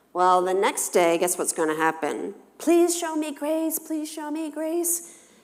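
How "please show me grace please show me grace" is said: put-on very high, sugary, sweet child voice, pleading. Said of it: "they're being sweet as pie".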